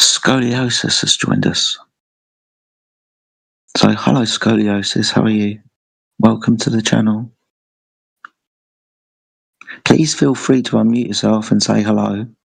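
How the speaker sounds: dropping into a stage whisper. Welcoming a new arrival after being told off for yelling: half-whispering. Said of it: "I'll whisper this".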